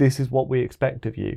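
ordinary talk, nothing marked

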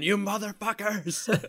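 mock unhinged shriek, very high. Retelling a movie scene where Bean gets his finger cut off: imitating Bean screaming. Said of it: "he's just screaming".

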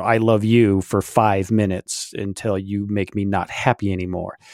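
normal talking voice

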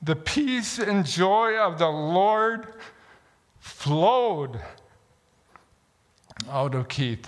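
teary, choked-up voice, "Lord" drawn out. A speaker tells an audience about a college janitor, teared up. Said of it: "I get all teared up with this".

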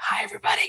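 soft, dramatic hushed whisper. Podcast co-host greets listeners at the start of the episode, whispering. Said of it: "why we're whispering".

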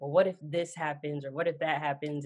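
ordinary delivery

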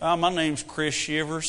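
put-on rodeo cowboy accent. Saying a bull rider's name like a cowboy would: put-on cowboy accent. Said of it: "you can't even say that with the Yankee accent".

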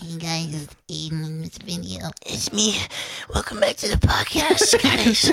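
mock pathetic little-child voice. Mocking how they sound on video, the speaker imitates their own pathetic little-child voice. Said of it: "I sound like a pathetic little child".

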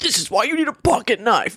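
pushy, aggressive man voice, pitched high. Retelling a pocket-knife video someone was watching: imitating an aggressive man voice. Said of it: "this such aggressive man voice".

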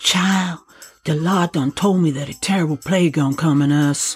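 almost whispering, barely above a whisper. Reading a story, Maddie answers Annie's question: almost whispering. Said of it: "almost in a whisper".

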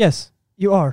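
robotic, emotionless, machine-like delivery. Imitating a calm line from a show character: robotic Abe Sapien voice. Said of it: "kinda like a robot".

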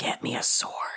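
slow, hushed, unhurried whisper. Voicing a character who leans in close: whispering in character. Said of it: "She leans in and whispers".

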